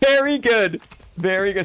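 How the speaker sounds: shouting. Praising a participant's contribution after thanking them, yelling. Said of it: "Sorry, I'm yelling".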